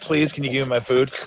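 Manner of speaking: put-on dog voice, mock-begging and pleading. Watching the shaking dog, the speaker voices it, voicing the dog mock-begging. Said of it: "She's like".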